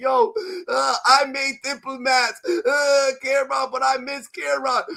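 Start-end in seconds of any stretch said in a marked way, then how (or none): 1.1-4.8 mock whiny crying, higher and slower. Speaker mocking a man who cries on interviews; mock crying, whiny. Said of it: "he's going crying on interviews saying".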